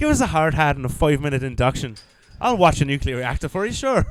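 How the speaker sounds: clumsy, bad put-on Northern Irish accent. Speaker riffs in character during a joking exchange: bad northern irish accent. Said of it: "My Irish is bad".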